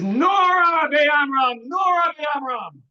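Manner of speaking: high, very slow, drawn-out mock scream. Retelling a sage screaming out to his fellow sages: imitating someone screaming out. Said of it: "And he screams out".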